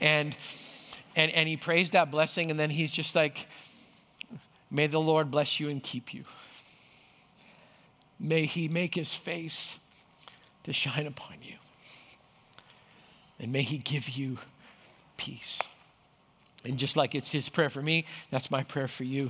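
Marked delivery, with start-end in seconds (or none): 4.7-15.6 hushed, quiet Scottish lilt. Retelling the blessing Ducky prays after their times together: quiet Scottish lilt. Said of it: "he prays in his quiet Scottish little lilt".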